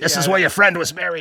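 put-on yelling outburst, kept restrained. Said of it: "Pacino thing where he starts yelling".

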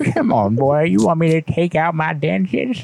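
put-on, high old granny voice. In a bit, speaking as a granny to a boy: old granny voice. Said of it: "that granny voice".

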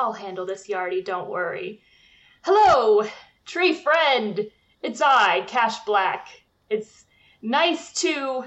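boastful, self-important, grand swaggering bravado. Player voices Cash stepping in front of Yardy to greet a tree, Cash puffing himself up. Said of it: "[name] kind of pushes out his shoulder in front of [name]".

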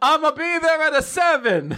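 bad Italian accent, very high and loud. Showing how they answer boring text messages, in a bad italian accent. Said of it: "bad Italian accent".

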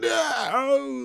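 very high, raw, rough, drawn-out anguished wail. Retelling a movie scene where a man sees his friend die: imitating a character shouting no. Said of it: "you hear him in the background just go".

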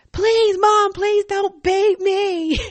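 piercing wail, very high and shrill. A mother retelling her child's plea in front of the congregation, retelling a scream. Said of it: "And then she'd scream".

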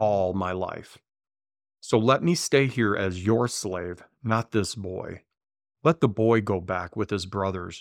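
plain

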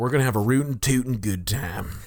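put-on cowboy voice. Playing a hormone cowboy inside someone's head: hormone cowboy voice. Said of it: "the hootin' tootin' hormone cowboy".

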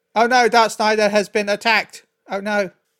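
put-on lifeless, very stiff, wooden script-reading voice. Mocking voice actors who seemed to just read the script, imitating stiff voice acting. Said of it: "The delivery was often very stiff".

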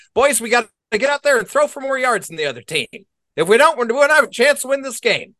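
put-on high-pitched voice with a half-Southern accent. Asking when a head coach last said this, imitating him in a semi-Southern accent. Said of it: "Why did we break into a semi-South accent?".

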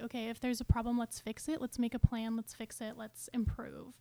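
ordinary delivery

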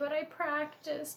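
put-on very high, soft little-girl voice. Recounting a movie scene that brought tears, in Lilo's little girl voice. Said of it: "Her little girl voice saying".

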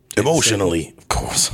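put-on gravelly British tough-guy voice. Playing a character for another speaker: Jason Statham voice. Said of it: "I'm Jason Statham".

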